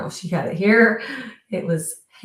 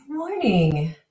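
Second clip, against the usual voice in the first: a little husky, slightly hoarse voice. Greeting friends at the start of the video, with a little husky voice. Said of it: "my voice is a little husky today".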